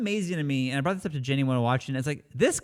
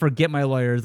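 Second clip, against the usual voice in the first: ordinary delivery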